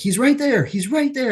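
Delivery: acted, very high, frightened, terrified screaming. Retelling seeing a dark figure step through the wall: imitating own past screaming. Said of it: "And I'm screaming".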